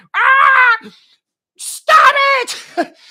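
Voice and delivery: panicked shriek, very high pitch, very loud. Retelling the speaker's wife rushing in to stop a fight: imitating wife's screaming. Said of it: "screaming like a fucking".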